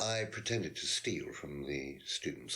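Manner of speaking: the word pretended leaned on hard.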